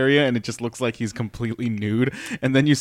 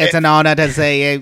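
loud, fake British accent; 4 semitones higher, 7 dB louder than usual. Retelling what a performer said to a UK crowd, put-on British accent. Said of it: "we're in the UK because we all talk like this".

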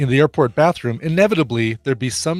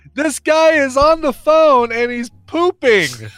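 loud, very high, shrill, drawn-out mock voice; 13 semitones higher, 5 dB louder than usual. Retelling what a man said about someone on the phone in the next stall, retelling a really loud remark. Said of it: "Don goes really loudly".

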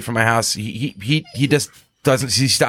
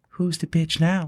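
gentle, mild-mannered, really soft, high little voice; 7 semitones higher, 5 dB quieter than usual. Speaker retells a voice he heard while sitting on the couch; really soft voice. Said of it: "I hear this really soft voice".

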